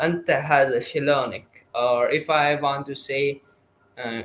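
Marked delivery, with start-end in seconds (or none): none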